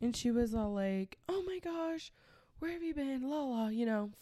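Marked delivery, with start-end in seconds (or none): 1.3-3.3 high, frantic, freaking-out outburst. Retelling how his mom greeted her: imitating mom freaking out. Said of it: "freaking out on me".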